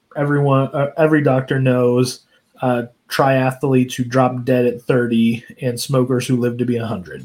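ordinary talk

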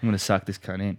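ordinary talk

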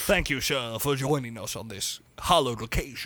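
put-on, vague, generic all-purpose English accent. Thanking the host for having him on, in a generic English accent. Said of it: "I was just doing a generic English accent".

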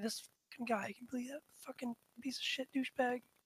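muttered, hushed grumbling under the breath. A character walking away after a labored sigh, grumbling under their breath. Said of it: "kind of grumbling under my breath".

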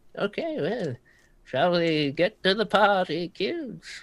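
put-on high elderly gentleman's voice. A character addresses the group as kids, in an old person voice. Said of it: "Old people voices".

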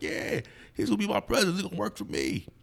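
high, put-on, gullible-sounding voice.

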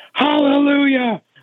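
piercing, shrill scream, very high-pitched. Retelling a quiet prayer meeting interrupted from above: imitating someone screaming. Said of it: "they hear somebody just screaming".

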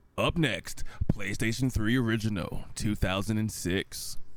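radio announcer voice. Reading the next console off the list for the listeners, in a radio announcer voice. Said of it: "A real radio voice".

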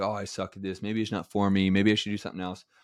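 usual speaking voice

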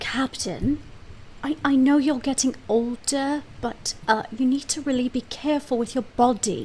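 slow, hushed half-whisper. A character addresses the captain so others won't hear, half-whispering. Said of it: "I'm gonna whisper to the captain".

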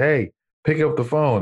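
high hollering. Retelling a man on the phone yelling to the speaker's aunt, retelling a yell. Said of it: "he yells to my aunt".

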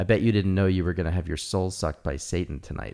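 put-on, imitated whisper. Retelling what she whispered in his ear at Burning Man: imitating a whisper. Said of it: "she whispered in my ear".

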